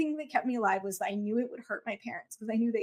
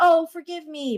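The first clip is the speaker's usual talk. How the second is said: mock insincere, very loud, high-pitched tone; 6 semitones higher, 9 dB louder than usual. Speaker recounting a phone call where a woman apologized to them, imitating her fake apology. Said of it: "she was being very like fake about it".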